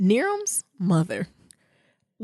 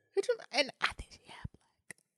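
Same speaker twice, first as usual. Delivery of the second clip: soft whisper. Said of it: "Why you whispering?".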